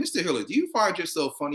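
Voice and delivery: dead-serious, bone-dry, straight-faced delivery. Retelling a movie scene, quoting the caseworker: imitating the caseworker, straight-faced. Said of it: "She was like".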